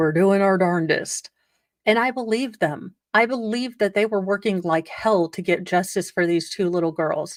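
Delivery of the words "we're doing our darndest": put-on, mock grizzled state cop voice. Recalling the yearly police statements on the case, imitating a grizzled state cop. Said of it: "grizzled state cop would come out and say".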